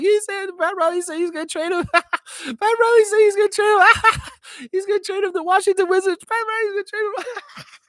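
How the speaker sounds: very high, loud, laughing through the words. Retelling a chat message as its sender might have said it: imitating Trevor J laughing while talking. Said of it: "I'm gonna do a dramatic interpretation of Trevor J".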